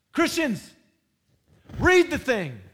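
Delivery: loud scolding yell. Addressing the Christians listening to you, yelling. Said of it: "I'm yelling at you".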